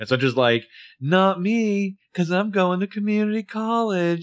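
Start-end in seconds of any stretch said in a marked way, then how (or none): 1.0-4.2 acted, very high, slow, drawn-out whiny sneer. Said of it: "She's like this whiny Spencer sneer".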